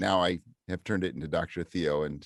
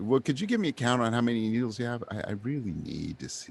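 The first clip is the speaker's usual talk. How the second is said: mock sugary, sweet and charming put-on voice; 4 semitones higher than usual. Copying the voice others used with them, a put-on sweet, charming voice. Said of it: "this little sweet, like sounding charming voice".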